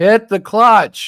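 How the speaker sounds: loud, slow yelling. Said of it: "he yelled at me".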